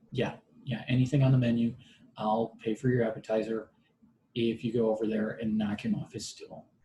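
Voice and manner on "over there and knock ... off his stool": ordinary talk, nothing marked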